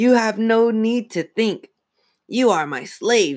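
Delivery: shrill, very high, rasping ventriloquist-dummy voice. Narrator voicing a talking dummy as it addresses two others, raspy dummy voice. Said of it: "the dummy rasped".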